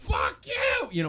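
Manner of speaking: imitated angry screaming. Retelling a furious teenage row, shouting a curse at her sister outside a race venue. retelling furious screaming. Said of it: "We're just screaming at each other".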